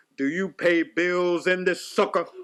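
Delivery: put-on authoritative voice. Retell how you, as her daddy, gave her that look and spoke in your James Earl Jones voice. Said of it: "with my James Earl Jones voice".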